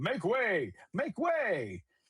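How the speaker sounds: crackly, staticky robot voice, high, slow. Narrator reading a story, a robot shouting over the crowd: loud staticky robot shout. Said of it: "a loud, staticky voice shouting over the crowd".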